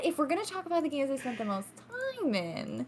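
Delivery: soft, sing-song, mock knowing, suggestive insinuation. Correcting another person's account of their own earlier words, in an alluding voice. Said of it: "in like a alluding voice".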